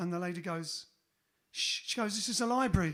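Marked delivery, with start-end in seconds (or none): 2.1-2.9 put-on English accent. Telling a blonde joke, voicing the librarian, in an english accent. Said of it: "don't know why she says it in English accent".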